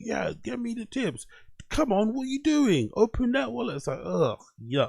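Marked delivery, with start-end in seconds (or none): 0.0-3.8 fake drill-sergeant voice, pleading, very high. Imitating DSP begging viewers for tips: DSP's fake drill sergeant begging. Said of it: "fake, kind of, like, um, s-, drill sergeant, you know, way of, like, doing the begging thing".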